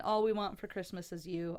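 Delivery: ordinary talk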